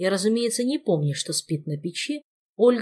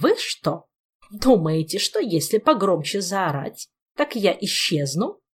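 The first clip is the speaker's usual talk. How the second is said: cranky, grousing, querulous ghostly voice. Narrator reads a ghost woman's line to the screaming people, grumpy. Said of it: "Сварливо произнесла призрачная тетка".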